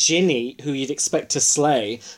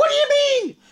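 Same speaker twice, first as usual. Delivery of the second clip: indignant, high-pitched tantrum outburst. Imagining being there and throwing tantrums: acting out a tantrum. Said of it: "I'd be the one throwing tantrums".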